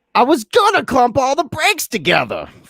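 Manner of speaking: very high, wildly animated, swooping sing-song. Doing an impersonation of George, imitating George. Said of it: "my George impersonation".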